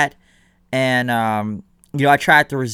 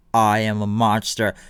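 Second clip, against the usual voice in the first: put-on big scary voice, lower and slower; 5 semitones lower than usual. Describing a man on screen making up a voice, imitating a big scary voice. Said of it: "big scary voice".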